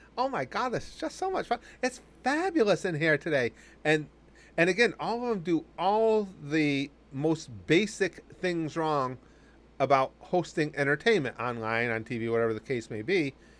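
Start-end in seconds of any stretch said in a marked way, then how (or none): 0.2-3.5 put-on high, swooping, over-the-top gushing Valley girl voice. Imitating a host who sounds like an over-the-top valley girl. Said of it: "she's trying to be an over-the-top Valley girl".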